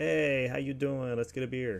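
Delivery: put-on Canadian accent sounding Jersey. Describing how Americans see Canadians, attempting a Canadian accent that comes out Jersey. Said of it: "that might have been a more Jersey accent".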